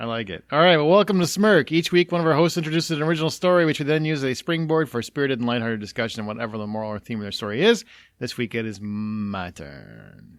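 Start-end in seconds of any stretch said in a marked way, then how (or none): 8.2-10.4 mysterious, ominous, low, very slow and drawn out. Show host opening the week's story segment, in a mysterious, ominous tone. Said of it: "Why do you sound so mysterious?".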